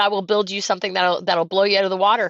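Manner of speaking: ordinary talk, nothing marked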